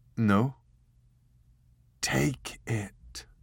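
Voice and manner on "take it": hushed whisper, pitched higher. Narrator reading a story, a woman struggling to breathe speaks to a man: whispering. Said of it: "she whispered".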